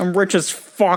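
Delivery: marbly-mouthed moneyed voice. Mocking a politician, the speaker does a marbly-mouthed rich guy voice. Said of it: "he's got the marbly mouth rich guy voice".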